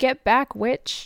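loud yell. Retelling a movie scene where the character yells: imitating Miracle Max yelling. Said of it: "he yells".

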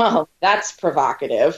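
shaming, judgmental, disapproving tone. Contrasting an excited reaction with a judgmental one, in a judgmental, disapproving tone. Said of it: "which would be very judgmental and shameful".

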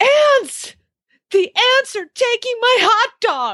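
mock shrill, very high, terrified child's wail. Parent retelling how their son screamed in the night: retelling a terrified scream. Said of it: "I hear this blood curdling, unbelievable screaming".

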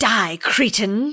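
put-on British accent. Retelling a scene where someone points a rifle at a cherub, in a put-on british accent. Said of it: "in a British accent".

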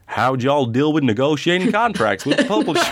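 put-on American accent. Put on the spot by the other speaker, speaker tries a put-on American accent. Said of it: "I'm not going to do it in a blooming American accent. You do it first".

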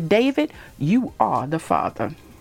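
swooping, dramatic talk-show host voice. Announcing who the father is, in a Maury Povich voice. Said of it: "in my Maury Povich voice".

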